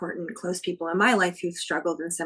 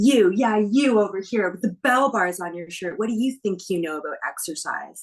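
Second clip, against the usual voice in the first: loud, taunting, mocking call-out; 5 dB louder than usual. Retelling Sunny mocking a bigger fan in the audience: imitating Sunny taunting a fan. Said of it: "And she goes".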